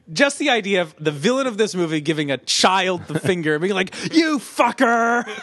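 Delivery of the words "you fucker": mock screaming. Recapping a movie, the speaker acts out the villain cursing at a child, retelling a scream. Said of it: "as he screams".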